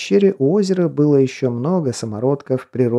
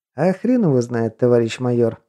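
plain

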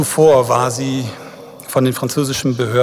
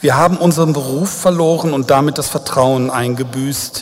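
plain

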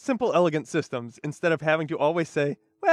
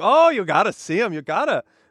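loud put-on Seattle local's accent; 3 semitones higher, 5 dB louder than usual. Retelling what everyone in Seattle keeps saying to them: put-on Seattle accent. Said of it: "That's a Seattle accent".

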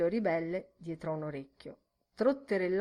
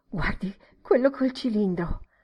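flustered, stirred-up, agitated urging with raised voice; 2 semitones higher, 6 dB louder than usual. Narrator reads a woman's exclamation to a companion, agitated. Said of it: "disse agitata".

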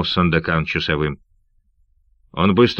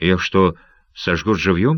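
usual speaking voice

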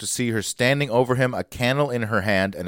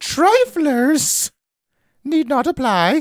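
put-on high, loud Norwegian accent, pitched up; 5 dB louder than usual. Finishing a widow's personal ad aloud: Gunness voice, Norwegian accent. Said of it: "I'll do it in Gunness's voice".

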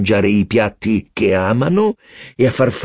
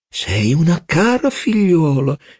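deeply moved, tender, raised pitch; 7 semitones higher than usual. A father speaks to his young daughter: murmured, moved. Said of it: "mormorò a Gilbert".

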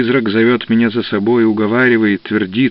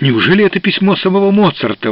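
high, sudden exclamation; 8 semitones higher than usual. Jesson, after a letter is read aloud, exclaiming. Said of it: "— воскликнул Джессон".

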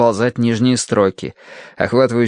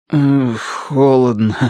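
word forced and squeezed out; 2 semitones higher than usual. A narrator reads a man's reply when asked what is wrong, forced out. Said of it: "выдавил Бадри".

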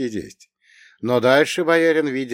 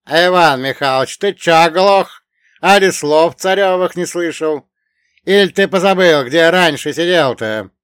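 very loud, gleeful, merry, sneering, mocking tone; 6 semitones higher, 9 dB louder than usual. Someone on the bench behind the narrator calls out to Ivan Mikhailovich, cheerful and mocking. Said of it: "сказано было весело, с издевкой".

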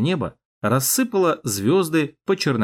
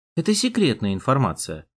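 usual speaking voice

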